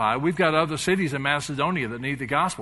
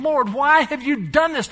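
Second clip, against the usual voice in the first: mock grumbling, much higher; 10 semitones higher, 4 dB louder than usual. Acting out jailed men complaining to god in a bible story, mock grumbling. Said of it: "screaming at God saying".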